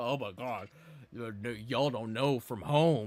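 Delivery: play-acted scornful, derisive voice with drawn-out stammer. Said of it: "every five seconds talking about".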